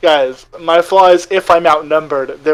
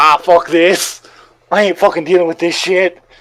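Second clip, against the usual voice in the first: put-on half-yelled outburst in a Cockney accent; 2 semitones higher than usual. Recapping for those who missed it, when Kitty got surrounded: imitating Kitty's screaming Cockney. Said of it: "screaming with this Cockney accent".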